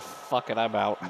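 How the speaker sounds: plain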